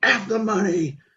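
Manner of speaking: shrill, very high, shrieked outburst. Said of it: "He just screamed, echoing".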